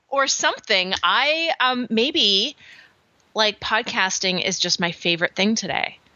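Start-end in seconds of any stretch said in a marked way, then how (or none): none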